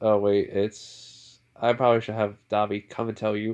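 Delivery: ordinary delivery, nothing marked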